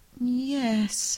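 doubtful, drawn-out, high-pitched yes. Alice answers the Gryphon's question; doubtful. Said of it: "said Alice doubtfully".

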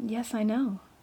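low voice. Answering a girl who insists she will soon be dead, low tone. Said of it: "answered Anne in a low tone".

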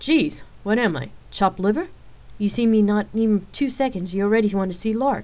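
good-natured, playful, teasing, mildly complaining tone. Rain responds to the two who ask for lark right after greeting her, teasing. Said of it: "Rain teased the two".

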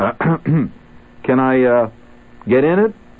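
shy and hesitant. In a car showroom, the narrator asks the man at the desk, timidly. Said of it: "I asked timidly".

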